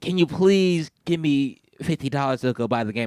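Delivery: mock wheedling, earnest, begging voice. Retelling begging a parent for game money: imitating own childhood begging. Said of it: "I begged him".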